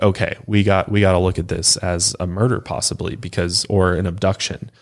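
plain

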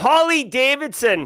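natural, own Boston accent. Reading a joke answer in actual accent, not radio voice: Boston accent. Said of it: "I do have to read this in my actual Boston accent, not my radio voice here".

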